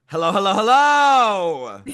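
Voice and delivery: high, loud, showy, repeated "hello"s, each drawn out. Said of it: "[name], um, [name] doing [name]".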